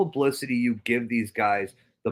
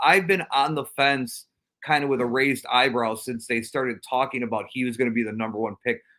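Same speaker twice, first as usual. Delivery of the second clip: ordinary delivery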